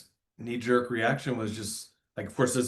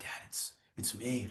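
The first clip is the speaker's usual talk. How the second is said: quiet, secretive, whispered murmur; 13 dB quieter than usual. Retelling a phone call from the hospital, imitating the caller whispering. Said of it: "And he's whispering".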